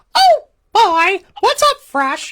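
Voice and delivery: very high, swooping cartoon voice. Greeting a viewer watching from Florida in his Mickey voice. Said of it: "I do my Mickey voice, so I'll do it for him".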